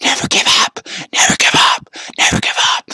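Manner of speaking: urgent, loud, pushed-out stage whisper, repeated. Urging fans never to give up, whispering into their ear: whispering. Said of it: "I'm whispering".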